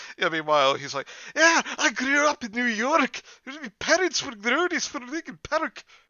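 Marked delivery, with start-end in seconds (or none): 1.4-5.8 put-on Scottish accent, higher and louder. Retelling what a school friend claimed, in a Groundskeeper Willie voice. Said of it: "That's my best, uh, groundskeeper, Willie".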